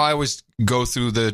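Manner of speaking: ordinary delivery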